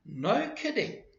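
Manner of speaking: very high-pitched, surprised, disbelieving delivery. Showing how to express surprise when speaking: surprised, hard to believe. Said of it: "if we are expressing surprise, I will say".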